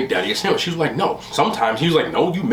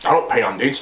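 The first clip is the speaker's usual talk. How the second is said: mock deadpan delivery; 2 semitones lower than usual. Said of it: "deadpan respond".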